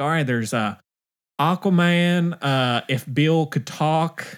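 mock Southern drawl, slow, high. Retelling what a woman at a theater said: imitating a stereotypical southern accent. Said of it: "very stereotypical Southern accent, kinda, like, draw".

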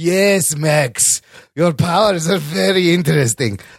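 put-on slow, drawn-out German accent. Retelling a movie scene with Doctor Kafka: Doctor Kafka German scientist voice. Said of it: "the stereotypical German scientist".

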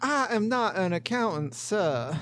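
faked Southern accent, laid on thick. A player speaks in character during a roleplay session; southern accent. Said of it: "I think we have too many southern accents".

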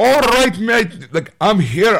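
put-on Scottish dwarf accent. Retelling a film scene where a dwarf arrives on a pig: scottish accent. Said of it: "a Scottish accent".

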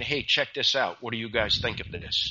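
mock-sheepish, soft and low. Retelling showing a product to people from home, the speaker acts out a sheepish ask. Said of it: "I very sheepishly said".

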